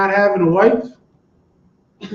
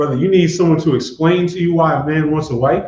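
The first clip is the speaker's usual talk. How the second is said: plain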